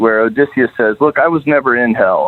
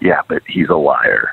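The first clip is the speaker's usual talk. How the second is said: confiding, hushed half-whisper; 8 semitones lower than usual. Retelling how Virgil leans over to Dante: imitating a half-whisper. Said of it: "leans over and whispers".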